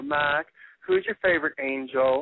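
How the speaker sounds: sweet, small southern voice, slow sing-song. Retelling what a woman said to him in the room, in a sweet southern little voice. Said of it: "she would go in her sweet southern little voice".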